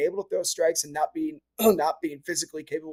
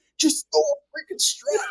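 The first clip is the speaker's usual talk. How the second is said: very high, exasperated, frustrated grumble under the breath; 12 semitones higher than usual. In the dugout while a pitcher struggles, the speaker retells yelling under breath. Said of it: "I'll be yelling under my breath".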